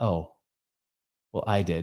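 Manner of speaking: put-on soft, low, quiet, heartbroken tone. Speaker retelling a woman's answer on a phone call, imitating a brokenhearted woman. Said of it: "she's brokenhearted".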